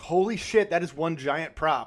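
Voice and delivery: ordinary delivery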